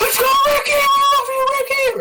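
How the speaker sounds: very high, shrill, excited screaming. Retelling how he and his buddies screamed from the front row, retelling excited fan screaming. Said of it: "me and my buddies just start screaming".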